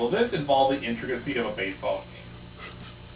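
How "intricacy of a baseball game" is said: normal talking voice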